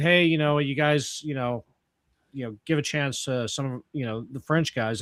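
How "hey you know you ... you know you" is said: usual speaking voice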